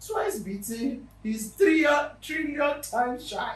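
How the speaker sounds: slow, loud playful shout.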